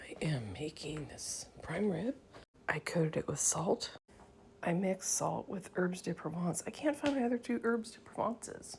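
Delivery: soft, breathy, very quiet whisper. Christmas morning, cooking prime rib while Ethan is asleep, whispering. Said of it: "I'm whispering because Ethan's asleep".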